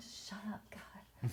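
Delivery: annoyed, soft, unvoiced hissing whisper under the breath.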